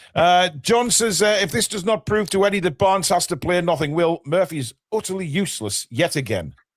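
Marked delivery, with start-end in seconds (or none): none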